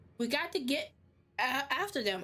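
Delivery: voice cracking partway through the line. Urging the others to go after a captured brother, voice cracking. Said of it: "why did my voice crack like that?".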